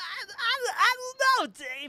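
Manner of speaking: stammered out, very high and loud. Describing how Bobcat talks, a Bobcat voice impression. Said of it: "Bobcat is kind of like mankind in in his voice".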